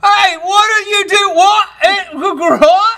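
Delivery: high, loud, bad cockney accent.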